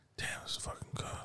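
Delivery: very quiet, breathy whisper under the breath. Mocking how someone acts while nobody else is home: imitating someone whispering. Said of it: "there's no reason to be whispering".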